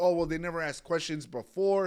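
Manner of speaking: usual speaking voice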